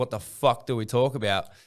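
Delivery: normal talking voice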